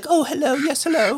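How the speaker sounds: goofy, dainty, very high little British accent. Describing a character's voice, the speaker demonstrates a little British accent. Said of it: "a little British accent like this".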